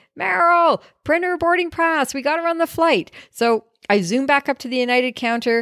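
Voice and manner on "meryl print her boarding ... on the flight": pitched-up shouted yell. Retelling an airport story where he calls to Meryl: imitating someone yelling. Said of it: "and he's yelling".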